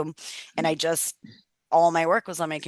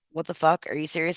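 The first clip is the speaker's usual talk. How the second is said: put-on, acted upset tone. Retelling reading a landlord's text, retelling own upset reaction. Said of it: "So I was super upset".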